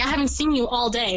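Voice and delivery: plain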